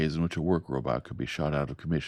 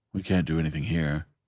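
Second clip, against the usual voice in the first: usual speaking voice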